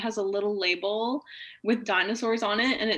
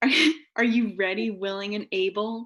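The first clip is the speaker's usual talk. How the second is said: fake seductive, sultry bedroom voice. Doing a comedy bit about consent, put-on dirty talk voice. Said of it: "this is my dirty talk voice".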